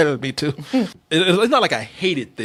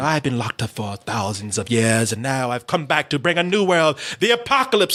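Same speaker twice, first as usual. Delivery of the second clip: fake, put-on British accent; 2 semitones lower than usual. Mocking a villain's speech to a friend, in a fake British accent. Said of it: "that fake British accent".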